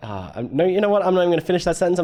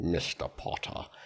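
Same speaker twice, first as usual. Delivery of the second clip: soft, low, breathy, hushed near-whisper character voice; 11 semitones lower, 14 dB quieter than usual. Showing how a Snape impression starts: Snape voice. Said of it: "I was about to do a Snape impression".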